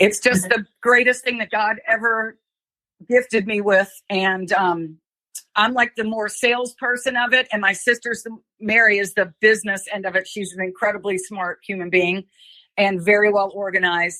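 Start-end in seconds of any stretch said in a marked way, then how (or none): 0.0-3.9 choked-up voice, breaking and catching with emotion. Speaker thanking the community for its response, choked up. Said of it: "I'm getting choked up a little bit".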